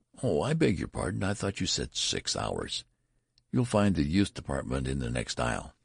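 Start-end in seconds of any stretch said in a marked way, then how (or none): none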